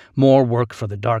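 ordinary delivery

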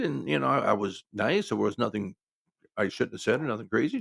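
ordinary delivery

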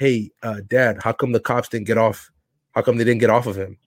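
ordinary talk

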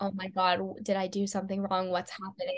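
acted nervous voice. Retelling own words when pulled aside by producers: imitating own nervous panic. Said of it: "I was so nervous".

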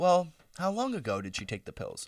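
calm, even tone. Retelling a mother asking questions in an emergency: imitating someone very calm. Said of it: "very calm questions".

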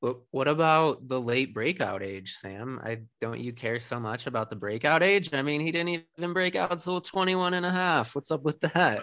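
slow, sarcastic, teasing, needling. Teasing the other speaker with a question about breakout age: sarcastic. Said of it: "I say that sarcastically".

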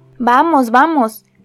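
calling out, exclaiming. Mr. Utterson responds to Lanyon's refusal to hear of Jekyll, exclaiming. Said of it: "exclamó".

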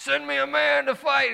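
very high, raspy, rough, far-carrying shout. Retelling how a man called out from the other side, retelling a holler. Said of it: "he hollered".

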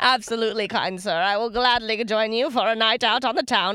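affected, put-on Transatlantic accent. Teased for going British, she shows the voice in a put-on Transatlantic accent. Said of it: "It's like Transatlantic".

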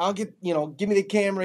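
put-on, loud hollered call. Telling a hunting story, retelling Uncle Jay hollering at the speaker. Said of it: "Uncle Jay's hollering at me like".

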